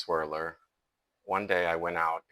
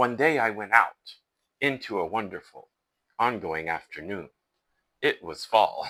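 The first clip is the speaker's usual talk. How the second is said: each line stressed, pauses between lines; 3 semitones higher, 6 dB louder than usual. Showing the way the speaker doesn't read, emphasizing each line. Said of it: "emphasize each line like this".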